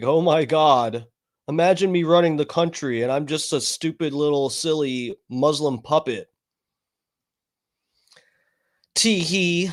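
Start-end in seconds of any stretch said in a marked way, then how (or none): none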